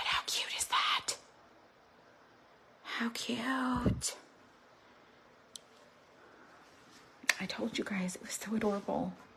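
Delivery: speaking quietly. Showing a door decoration while her husband sleeps nearby, speaking quietly. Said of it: "I'm being quiet 'cause my husband's asleep".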